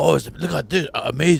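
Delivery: put-on excited, gushing collector voice. Mocking how Hot Toys fans praise a figure: imitating an excited Hot Toys collector. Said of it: "Do the Hot Toys collector impression again".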